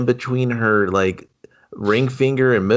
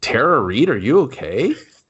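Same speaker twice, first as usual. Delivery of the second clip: usual speaking voice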